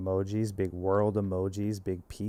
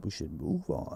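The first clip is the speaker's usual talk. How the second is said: breathy, hushed nineties movie-trailer narrator whisper; 5 dB quieter than usual. A show host repeats his transition line in his best movie trailer guy voice. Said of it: "That's like my best movie guy voice".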